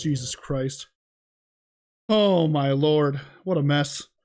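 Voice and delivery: out of breath, breathless. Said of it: "I just ran down here so fast".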